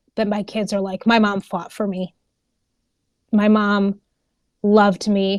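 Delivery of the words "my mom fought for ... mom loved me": tearful, emotional, on the edge of tears. A mother imagining her kids describing her legacy, tearing up. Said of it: "I'm tearing up".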